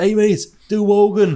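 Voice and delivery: mock Liverpool-accent shouting. Retelling a comedian's story of a heckler in Liverpool, imitating a scouser heckler shouting. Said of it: "Some scouser shouts out".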